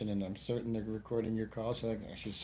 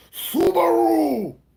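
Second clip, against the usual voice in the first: very high, very loud, quavering, drawn-out samurai battle cry; 16 dB louder than usual. Showing how a samurai about to fight would say subaru: samurai battle cry. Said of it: "it shakes, kinda".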